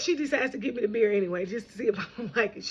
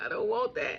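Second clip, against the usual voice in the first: quieter mock crying in a tearful voice; 4 dB quieter than usual. Retelling refusing a bitter drink from mom, imitating crying. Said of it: "I start crying".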